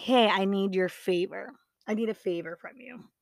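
ordinary talk, nothing marked

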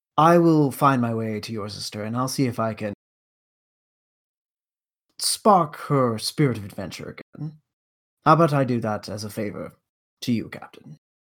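courteous, polite, formal, charming put-on character delivery. In a role-play game, speaking in character to the captain: polite formal character voice.

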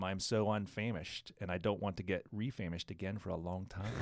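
plain

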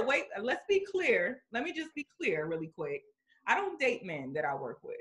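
ordinary delivery

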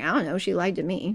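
ordinary talk

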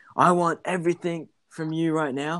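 put-on yelling. Retelling the coach's call above the crowd noise: imitating someone yelling. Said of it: "he kinda looks at me and he just yells".

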